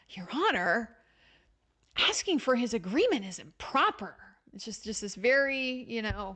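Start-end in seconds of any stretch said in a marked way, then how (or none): 0.2-4.2 completely pissy, irritated, annoyed tone. Imitating a prosecutor's objection in court: imitating a pissy annoyed tone. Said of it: "in this completely pissy tone, like Mister Luttrell was doing".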